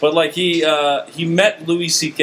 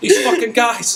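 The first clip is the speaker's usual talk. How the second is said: put-on ranting voice, high and slow. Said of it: "it did sound like Bill Burr at the end".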